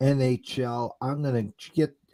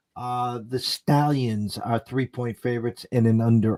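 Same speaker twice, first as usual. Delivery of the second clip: plain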